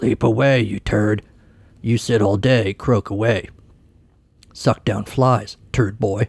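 rough, gravelly voice. Reading aloud a mocking voicemail in a story: gravelly voice. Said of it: "in a gravelly voice".

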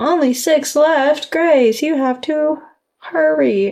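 sarcastic tone. Speaker urging grace to hurry, sarcastic urging. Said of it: "Don't be sarcastic with me".

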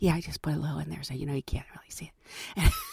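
hushed whisper. Retelling what a woman working the beverage cart said, whispering. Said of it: "And she's whispering because".

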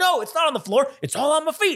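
mock yelling. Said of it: "they're yelling at each other".

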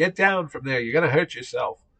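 high, alarmed yell, as if from far away. Retelling how someone below screamed up at the speaker on a cherry picker: imitating someone screaming. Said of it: "Howard Chaykin was screaming at me from below".

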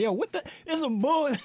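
many voices yelling together. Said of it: "Everybody was yelling".

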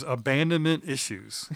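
ordinary talk

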